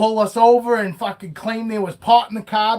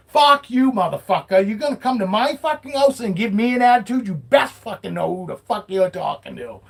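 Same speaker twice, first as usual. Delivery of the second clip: put-on angry, furious ranting voice. Retelling what was said to the cop: retelling an angry telling-off. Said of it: "I let that fucking cop have it too".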